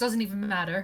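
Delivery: put-on overconfident, dismissive tone. Retelling someone shrugging off a mistake: imitating overconfident dismissal. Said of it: "With such confidence, he's like".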